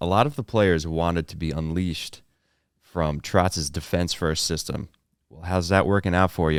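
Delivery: plain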